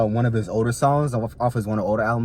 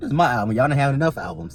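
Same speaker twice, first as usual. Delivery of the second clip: normal talking voice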